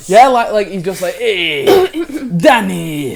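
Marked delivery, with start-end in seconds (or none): 1.2-3.2 put-on mobster accent, higher and louder. Joking about how a voice in a boy's head might talk, doing Tony in an Italian mobster accent. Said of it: "a big Italian mobster accent".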